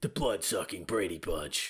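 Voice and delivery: low raspy voice. Repeating a quoted line on request, in a low raspy voice. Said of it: "lower your voice and talk as raspy as possible".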